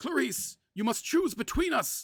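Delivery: grim, urgent gasped voice, very high. A man exhausted from a magical duel addresses a woman, gasping, grim. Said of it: "Lord Harrowing gasped grimly".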